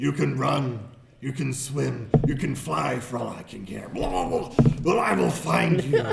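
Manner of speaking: very loud, booming, rough growling bugbear monster voice. Voicing a bugbear calling out to the others in the water, bugbear growl. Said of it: "hear the bugbear growl out".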